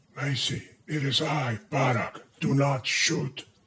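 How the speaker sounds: whispered.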